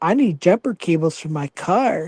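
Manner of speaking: low, put-on sexy, seductive voice. Retelling a female teammate asking for jumper cables, imitating her acting sexy. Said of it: "Like she was acting all sexy".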